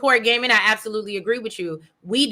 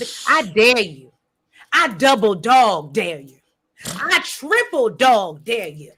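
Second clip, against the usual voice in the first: slow, bold, forceful, chest-out delivery full of conviction. Recapping a scene, quoting Claudia's dare: retelling a line said with her chest. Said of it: "She said it with her chest".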